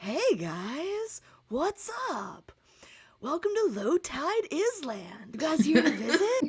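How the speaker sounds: unhurried, high, drawn-out talking sea tortoise voice. Voicing a large sea tortoise greeting the crew at an island: sea tortoise character voice. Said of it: "he looks over at you guys, and he's like".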